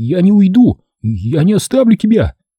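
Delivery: high, drawn-out, rising shout. Torok, taking up the knife, cries out that he won't leave; shouting. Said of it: "— закричал он".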